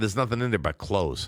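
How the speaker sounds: ordinary talk, nothing marked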